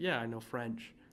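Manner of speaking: plain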